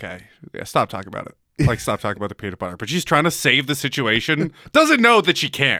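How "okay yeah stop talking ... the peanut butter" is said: soft, quiet pleading half-whisper under the breath. Retelling a parent telling someone at the table to stop: imitating a half-whisper. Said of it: "whispering to her".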